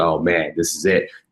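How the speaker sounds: ordinary delivery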